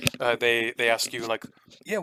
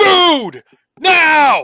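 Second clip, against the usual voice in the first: furious screaming shout, higher and louder; 16 dB louder than usual. Voicing a character demanding food from the waiters: screaming at the top of his lungs. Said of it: "screams at the top of his lungs".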